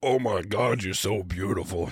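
very deep, low-pitched voice. Retelling a cringy interview, imitating Vin Diesel's voice. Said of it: "His voice is so wild".

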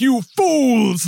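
high, loud, unhinged, self-satisfied villainess voice. Describing a scary movie villain, imitating her crazy voice. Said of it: "her voice is crazy".

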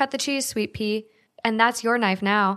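ordinary talk, nothing marked

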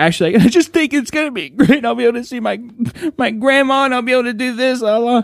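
acted tearful, sobbing, voice catching on words. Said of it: "he's kinda choking up and he's sobbing".

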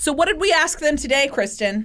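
shouting. Asking the other host about today's question, shouting. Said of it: "Why are you shouting at me?".

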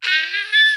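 high-pitched, excited scream. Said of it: "I literally was like".

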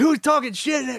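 mock yelling. Retelling how a friend came out of the shower: imitating someone yelling. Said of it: "he's yelling into the bed".

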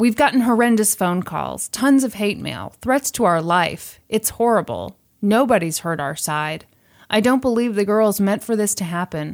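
ordinary delivery

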